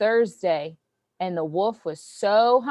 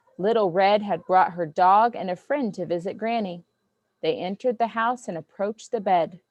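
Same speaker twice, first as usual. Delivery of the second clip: ordinary delivery, nothing marked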